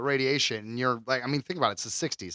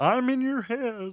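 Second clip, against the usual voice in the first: put-on frog puppet voice, higher pitch; 11 semitones higher than usual. Voicing an alien speaking in someone's head: Kermit voice. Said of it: "Why do you sound like Kermit?".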